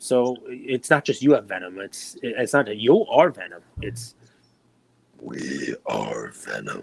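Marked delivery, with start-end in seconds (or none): 3.8-6.8 hushed, very slow, murmured monster voice. Explaining a catchphrase in conversation, Venom voice. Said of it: "That's what he sounds like".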